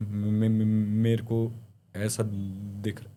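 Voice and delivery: put-on fearful stutter. Describing a man who began talking in fear, imitating fearful stuttering. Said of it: "डर-डर के बोलने लगा, हकलाते हुए".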